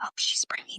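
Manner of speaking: soft, hushed gossiping whisper. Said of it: "a group of nurses whispering".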